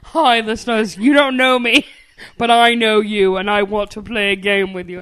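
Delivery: put-on manly voice with slight British accent. Addressing the podcast's listeners, in a manly voice that's a little british. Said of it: "my manly voice is a little British".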